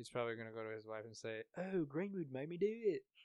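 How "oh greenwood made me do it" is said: put-on good British accent, loud, slow and deliberate. Acting out a man going back to explain himself to his wife, in a great put-on British accent. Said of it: "great British accent".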